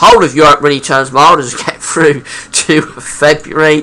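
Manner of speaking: high-pitched, fighting back laughter. Presenting a long-range weather outlook for europe, holding back a laugh. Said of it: "I'm trying not to laugh".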